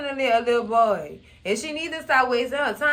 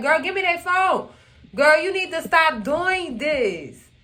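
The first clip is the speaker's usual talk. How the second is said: mild, half-hollered, scolding tone; 4 semitones higher than usual. Retelling friends yelling at her to hand over the phone: imitating friends yelling. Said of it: "they yelling and hollering and screaming".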